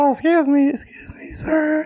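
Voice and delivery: very high, squeaky, cracking adolescent voice. Showing how a lost voice sounded: Simpsons puberty guy voice. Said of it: "sounded like that puberty guy on The Simpsons".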